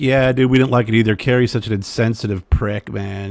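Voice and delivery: ordinary talk, nothing marked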